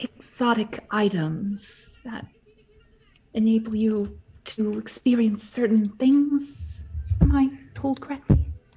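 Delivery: hushed, unaccustomed tone. A visitor in a warded shop asks the shopkeeper something, in a hushed tone. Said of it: "She speaks in a hushed tone".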